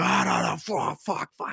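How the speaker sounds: mock raspy, high, rough, dragged-out distressed outcry. Telling how a guy screamed as ceiling tiles fell on him: retelling a scream. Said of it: "And he's screaming".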